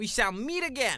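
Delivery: put-on New York Brooklyn accent. Voicing a detective asking for help finding the real one: new york brooklyn accent. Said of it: "a New York, Brooklyn-y accent".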